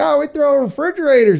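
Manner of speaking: put-on high-pitched Southern accent. Acting out the people in the story who dump trash: put-on Southern accent. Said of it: "I don't know why I have Southern accents".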